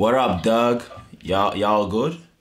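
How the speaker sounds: terrible put-on American accent. British guest asked to show their best american accent, doing a bad american accent. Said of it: "Let me hear your best American accent".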